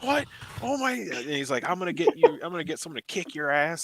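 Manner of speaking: put-on high-pitched screaming. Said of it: "screaming like a girl at me on the phone".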